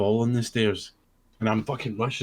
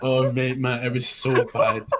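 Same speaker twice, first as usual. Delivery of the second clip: ordinary talk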